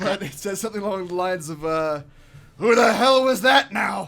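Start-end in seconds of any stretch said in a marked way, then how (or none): 2.6-4.1 booming, gruff, very loud giant roar. A game master voices a giant calling out ahead of the players: gruff Harshnag giant voice. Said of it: "You hear a gruff voice ahead of you".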